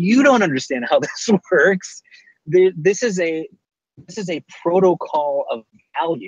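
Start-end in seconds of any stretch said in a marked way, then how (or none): 0.0-2.0 mild mock yell, with a laugh. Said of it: "I feel like I'm yelling at a wall going".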